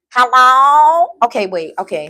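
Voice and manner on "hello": talking through the nose, louder. Redoing the voice the way it was done as a kid: nasal voice. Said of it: "Let me do it how I used to do it when I was a kid".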